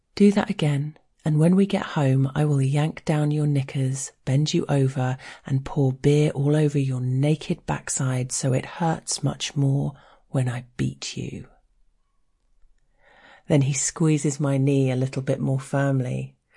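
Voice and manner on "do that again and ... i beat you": plain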